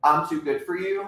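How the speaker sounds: ordinary talk, nothing marked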